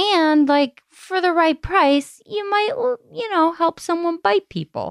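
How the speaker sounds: light put-on Italian accent, pitched very high. Mid-discussion, the speaker slowly slips into a mild Italian accent. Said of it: "you slowly started to do a very mild Italian accent".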